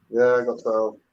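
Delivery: disappointed tone. Saying how many you got before a challenge, sounding disappointed. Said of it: "You sound disappointed there".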